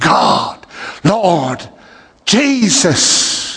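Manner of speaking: acted, high, swooping, desperate calling out. Retelling driving back to the church: retelling crying out to God. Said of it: "I'm crying out".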